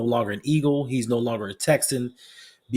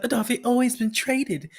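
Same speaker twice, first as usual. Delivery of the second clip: high, tearful, sobbing, crying voice; 12 semitones higher than usual. Retelling a phone call from someone crying: imitating someone crying. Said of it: "a phone call of somebody crying".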